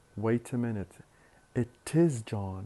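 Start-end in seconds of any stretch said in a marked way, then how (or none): 1.6-2.7 contrastive strong stress on the word is. Example of contrastive stress about it being john, stress on is. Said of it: "there should be a stress here".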